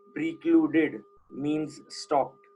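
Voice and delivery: very slow, emphatic, drawn-out delivery. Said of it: "underline the word precluded".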